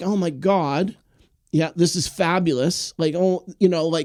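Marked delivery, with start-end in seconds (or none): none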